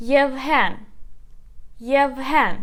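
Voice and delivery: Yevhen with stress on the second syllable. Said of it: "So let's put the stress together".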